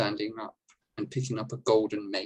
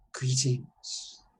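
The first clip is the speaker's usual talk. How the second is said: ringing, echoing chamber-like voice at an even level; 4 semitones higher than usual. Narrating a scene, the speaker voices a figure greeting the listeners: soft, booming, echoing voice. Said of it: "though this figure's voice is soft, it booms and echoes".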